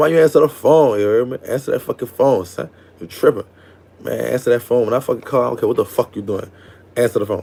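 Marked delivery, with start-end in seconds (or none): none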